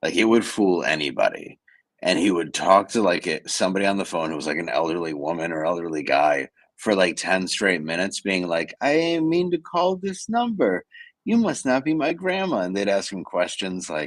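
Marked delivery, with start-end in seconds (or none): 8.8-12.6 put-on convincing, very high small-child voice. Retelling how he prank-called an elderly stranger, doing a little kid voice. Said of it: "He did this spot on little kid impression".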